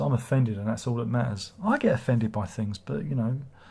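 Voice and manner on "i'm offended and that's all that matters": ordinary talk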